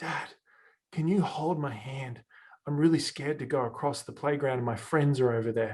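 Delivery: put-on whisper. A father retells his daughter whispering in his ear at the playground: retelling a whisper. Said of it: "she whispers into my ear and she says".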